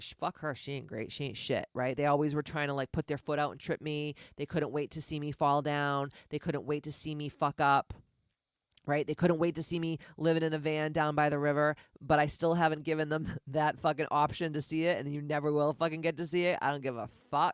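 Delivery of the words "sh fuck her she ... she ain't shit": low, quiet dismissive sneer. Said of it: "they were like".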